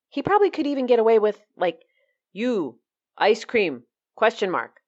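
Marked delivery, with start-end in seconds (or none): 2.3-3.9 put-on caveman voice, bare simple words. Imagining a shorter text asking for ice cream: put-on cave person voice. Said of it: "how I imagine a cave person would ask for ice cream".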